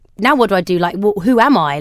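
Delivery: ordinary delivery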